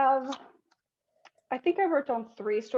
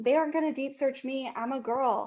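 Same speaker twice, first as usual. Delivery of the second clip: plain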